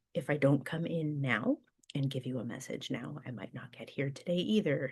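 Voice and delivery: ordinary talk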